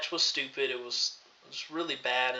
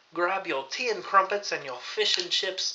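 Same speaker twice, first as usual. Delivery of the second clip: fake British accent, laid on, pitched up; 5 semitones higher, 4 dB louder than usual. Opening another episode of the Raw Rundown: put-on British accent. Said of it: "I thought I would do this whole video in just a British accent".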